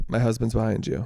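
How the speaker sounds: ordinary talk, nothing marked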